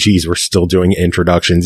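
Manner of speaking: plain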